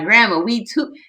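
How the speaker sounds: put-on high, loud screaming holler. Recalling how she screamed to Grandma while they played basketball: retelling someone screaming. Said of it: "she used to be screaming like".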